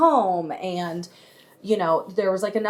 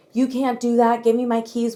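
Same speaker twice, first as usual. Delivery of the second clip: mock screaming, higher pitch; 4 semitones higher, 3 dB louder than usual. Retelling a woman refusing to hand over her car keys, imitating someone screaming. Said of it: "being like screamed at in my face".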